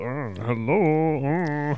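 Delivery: comic delivery with the word "hello" drawn out. Describing what a TV character says: Mister Bean voice. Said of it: "Or he goes".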